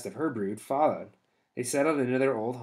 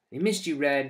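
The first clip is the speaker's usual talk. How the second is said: very small, faint voice; 3 semitones higher than usual. A little animal speaks to red, heard only by two listeners, in a very small voice. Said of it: "he said in a voice so small".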